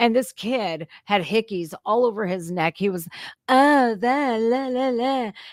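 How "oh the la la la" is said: showy, flouncing, flamboyant, very slow, drawn-out delivery. Retelling how a kid on a college campus acted: imitating a flamboyant manner. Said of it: "acting all flamboyant".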